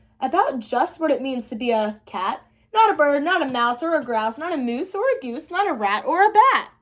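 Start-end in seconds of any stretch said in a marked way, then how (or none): none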